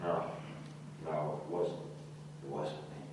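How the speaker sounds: shy, hesitant tone.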